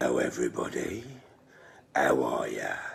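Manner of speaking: quiet, rough, creaky, croaky voice. Greeting everyone while struggling to breathe properly: messed-up voice. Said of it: "I've got, like, a fucked up voice".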